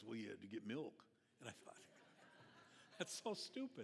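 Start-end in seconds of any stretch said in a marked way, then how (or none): 0.1-0.9 mock embarrassed, low, sheepish voice. Acting out an inner voice answering a question, in a mock-sheepish, embarrassed voice. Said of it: "this sheepish, embarrassed voice says".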